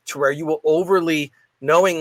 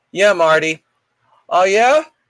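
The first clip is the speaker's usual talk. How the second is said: showy, loud, pitched-up put-on chatty voice; 5 semitones higher, 6 dB louder than usual. Acting out a fake phone call on a plane: loud fake phone conversation. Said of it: "talk like this the way they do on their phone".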